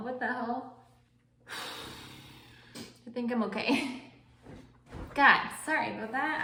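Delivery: voice catching, choked up with emotion. Recalling friends who stayed through stroke recovery, the speaker apologizes: getting emotional. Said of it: "I did not think that one was gonna make me emotional".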